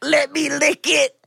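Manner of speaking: groaning delivery. Speaker acts out what the moaner starts saying: impression of the moaner. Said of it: "I'll do a impression of the moaner".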